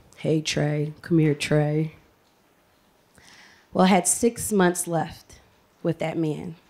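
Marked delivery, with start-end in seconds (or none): 0.2-2.0 raspy, rasping voice. Retelling how the man who called him Trey would call him over, raspy voice. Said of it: "he had like a raspy voice".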